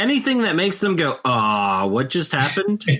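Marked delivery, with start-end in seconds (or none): 1.2-2.8 put-on, slow, bewildered, stunned disbelief. Imitating a stunned opponent after a surprise combo: imitating a stunned opponent. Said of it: "they look at you in disbelief".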